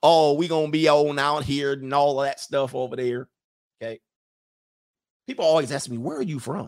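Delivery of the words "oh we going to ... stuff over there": talking with a Southern drawl. Imitating a football coach who started talking all Southern, Southern accent. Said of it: "he started talking all Southern".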